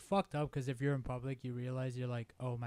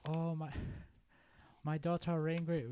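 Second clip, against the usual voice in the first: put-on Chinese-accented English; 4 semitones higher than usual. Asked to do accents, the speaker does a Chinese accent. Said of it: "I do a Chinese one".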